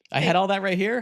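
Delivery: terrible, loud, very high-pitched woman's voice. Acting out a woman's reaction to finding money in her house: terrible impression of her. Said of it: "This is a terrible impression of her".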